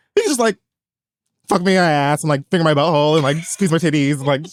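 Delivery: ordinary talk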